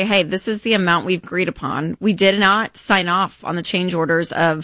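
ordinary talk

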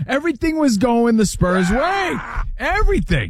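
high, shouted exasperation with disbelief.

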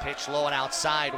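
ordinary talk

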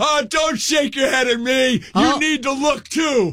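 very high, angry, scolding yell. Retelling yelling at a pedestrian from inside a closed car, retelling a yell. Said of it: "you yelled at her".

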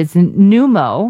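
pneumo drawn out slow, syllable by syllable. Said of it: "pronounce it?".

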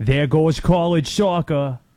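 loud, convincing put-on Boston accent. Quoting a movie line while talking about accents, Boston accent. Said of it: "A good Boston".

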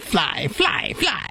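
high, rising witch cry voice. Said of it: "the witch going".

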